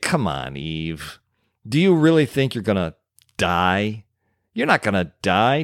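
mocking, scornful scoffing snort. Speaker imagines him snorting at Eve's answer and rolling his eyes, mock-scoffing. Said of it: "snort at Eve's answer, roll his eyes".

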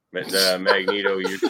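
ordinary delivery

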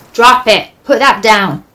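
rough, gruff, loud shouting voice. Reading a story aloud: a stranger shouts at the dog, gruff voice calling out. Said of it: "a gruff voice calling out".

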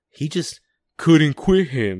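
bad cowboy accent, loud and high-pitched. Telling the story of Leopold and Loeb: bad Brokeback Mountain imitation. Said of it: "in a really bad Brokeback Mountain imitation".

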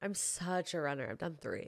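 ironic, tongue-in-cheek, sarcastic, boastful tone. Answering a question about running half marathons, sarcastic. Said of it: "that was me being sarcastic".

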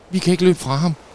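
very high, loud, gasped-out words. Reading a story, the narrator voices a character looking back while fleeing, gasping. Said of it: "gispede Storm".

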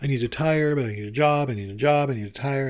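crying, talking through tears, high and loud. Retelling talking out loud alone while driving to a meeting, retelling crying while talking. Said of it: "I'm just crying and saying".

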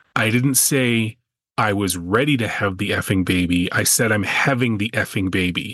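ordinary talk

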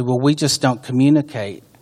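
plain

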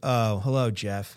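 falling voice inflection, pitch dropping down. Acting out a business answering a caller's phone call: falling voice inflection. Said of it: "so the voice inflection goes down".

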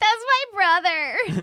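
put-on drunken, very high-pitched shouting. Retelling what Kamala yelled while drunk, the speaker is imitating drunken yelling. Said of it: "drunkenly yelling like".

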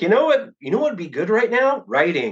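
high, coaxing, nagging voice. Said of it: "Just like".

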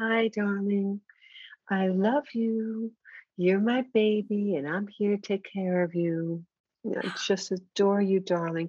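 tender, sweet, kind, adoring, loving voice. Demonstrating the voice people should use, sweet loving voice. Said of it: "It's a very sweet, kind, loving voice".

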